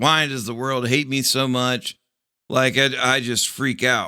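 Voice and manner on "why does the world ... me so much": usual speaking voice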